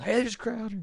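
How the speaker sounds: acted, very high, shrill screaming. Retelling how family call him out at hotels: imitating family screaming. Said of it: "start screaming".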